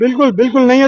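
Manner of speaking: ordinary delivery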